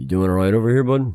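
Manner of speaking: gentle, soft-toned voice. Narrating Johnny as he moves over towards Miles, speaking in a soft tone. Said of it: "in a soft kind of tone".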